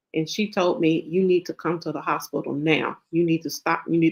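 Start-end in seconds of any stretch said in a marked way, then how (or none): 1.1-4.2 put-on very stern voice. Retelling what a doctor said on the phone: imitating a very stern voice. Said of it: "her voice was, like, very stern".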